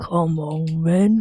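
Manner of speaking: gruff British tough-guy voice. Doing an impression of a silhouetted figure facing the ocean: Billy Butcher impression. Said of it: "my impression of the silhouetted figure".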